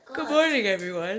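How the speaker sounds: speaking mid-yawn. Greeting everyone at the start of an average monday morning, yawning. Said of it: "I'm in the middle of a yawn".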